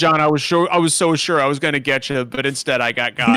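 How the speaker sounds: normal talking voice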